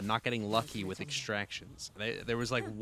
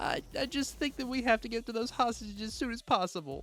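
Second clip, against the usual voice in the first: very high, whiny, pathetic-sounding voice; 13 semitones higher than usual. Showing how Sinclair would sound even in his big moment: whiny Sinclair impression. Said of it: "the whiniest, uh, most pathetic voice".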